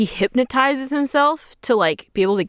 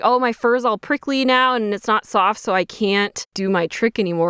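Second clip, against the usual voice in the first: ordinary talk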